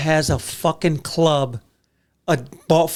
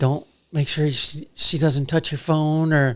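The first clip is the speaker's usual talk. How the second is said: imitated whisper; 3 dB quieter than usual. Retelling a warning about a peanut-eating passenger: imitating Denise whispering. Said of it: "Denise whispering".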